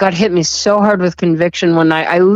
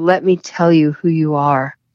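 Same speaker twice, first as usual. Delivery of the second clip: put-on loving, gentle whisper. Retelling how a voice spoke to them: imitating a loving whisper. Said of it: "in the most loving voice I've ever heard".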